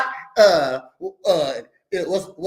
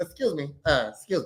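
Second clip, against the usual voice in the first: put-on old man voice; 4 semitones lower, 5 dB quieter than usual.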